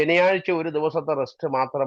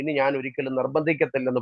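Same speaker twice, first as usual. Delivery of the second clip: ordinary talk, nothing marked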